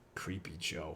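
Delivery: low, breathy, mocking whisper.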